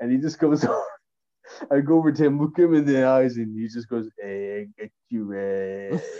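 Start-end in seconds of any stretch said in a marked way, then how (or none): 4.2-6.0 hushed, soft, very drawn-out drawl. Retelling how someone came over and spoke to him, doing a Stu Hart impression. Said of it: "he got me with the Stu Hart impression".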